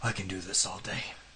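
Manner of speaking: breathy whisper, fully acted in character. Quoting a movie line for a quiz after being asked: Captain America voice. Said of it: "do it in character".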